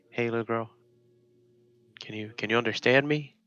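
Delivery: careful, unthreatening voice. Speaking to an unresponsive little girl, trying not to scare her, gentle and non-threatening. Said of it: "try not to scare her in any way".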